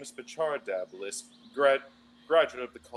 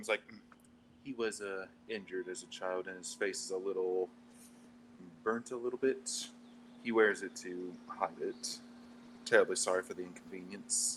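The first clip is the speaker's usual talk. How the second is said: quiet, soft, hushed confiding whisper; 4 semitones lower, 6 dB quieter than usual. A character comes up behind someone and speaks on his behalf, whispering. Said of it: "try to whisper to him".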